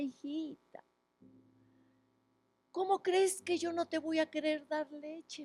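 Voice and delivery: mock weepy, tearful, crying voice. Speaker retells a mother answering her daughter who begs for milk, imitating a crying mother. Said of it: "Y su mamá lloraba y le decía".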